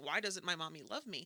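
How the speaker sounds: put-on crying child voice, pleading. Imagining a child pleading with a parent: imitating a crying child. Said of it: "my child is crying at me going".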